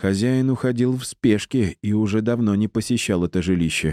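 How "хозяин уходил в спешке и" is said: ordinary delivery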